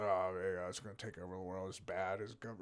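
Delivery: griping, disapproving, grumbling complaint tone. Retelling how a visitor's son reacted to talk of AI: imitating someone grumbling. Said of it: "he just started grumbling".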